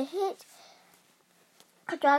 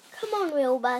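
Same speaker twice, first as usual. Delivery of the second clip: plain reading voice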